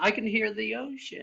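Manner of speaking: put-on high creaky grandmother voice.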